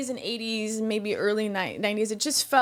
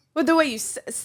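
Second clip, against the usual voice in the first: plain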